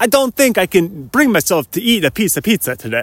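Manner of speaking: mournful put-on Italian accent. Repeating his own remark in a new voice: mock-sad italian guy voice. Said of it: "I sound like a sad Italian guy".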